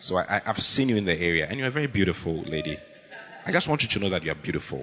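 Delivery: forced, put-on, very low deep voice. Showing how one chats up a lady: put-on deep voice. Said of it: "you need to use a deep, a deep voice".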